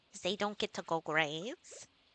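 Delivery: small, gremlin-like creature voice. Explaining why the chickens need feeding on a rainy day, in a gremlin-like voice. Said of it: "I sounded a little bit like a gremlin".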